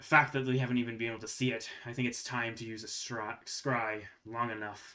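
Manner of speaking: very gruff, rough character voice. A game narrator voices someone overheard talking to others, in a very gruff voice. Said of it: "you hear a very gruff voice".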